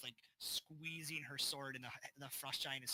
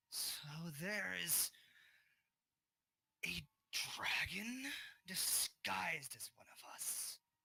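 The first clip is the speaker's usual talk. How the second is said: female giant voice through clenched teeth, higher pitch; 5 semitones higher than usual. Voicing a female fire giant who is grinding her teeth: female fire giant through gritted teeth. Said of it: "gritting of teeth".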